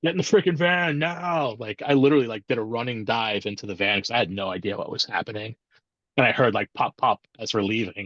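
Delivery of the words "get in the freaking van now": mock, high-pitched, loud yelled delivery. Retelling how a driver yelled during a shooting: imitating someone yelling. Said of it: "he yells at me".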